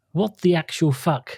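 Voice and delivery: ordinary talk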